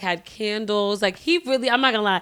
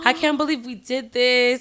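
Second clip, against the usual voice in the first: imitated crying while speaking; 2 semitones higher than usual. Retelling starting to cry right after it happened: retelling own crying. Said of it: "I started crying".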